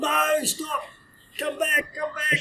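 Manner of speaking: shrill, very high yelling call. Retelling a joke, a handler calling after a running dog: imitating someone yelling.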